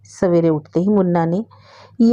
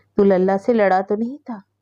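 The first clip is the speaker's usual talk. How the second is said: ordinary delivery, nothing marked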